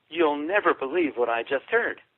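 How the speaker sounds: normal talking voice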